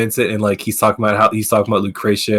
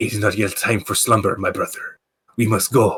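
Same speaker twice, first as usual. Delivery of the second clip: weird, laid-on, put-on Spanish accent. Retelling a game's secret ending where Genesis speaks, in a weird Antonio Banderas-like accent. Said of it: "this weird kind of like Antonio Banderas accent".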